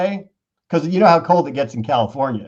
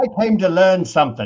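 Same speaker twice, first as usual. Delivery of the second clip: put-on English accent; 4 semitones higher than usual. Voicing a person's imagined reaction to the lesson, in an english accent. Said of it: "What happened to your accent?".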